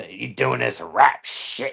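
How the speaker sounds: put-on drunken voice. Retelling how a drunk coworker came up at the bar: imitating someone drunk. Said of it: "he'd come up all drunk and be like".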